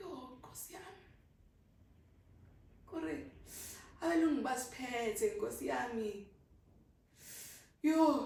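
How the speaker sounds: fighting back tears. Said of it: "I'm pressing my eyes so that they can't come out".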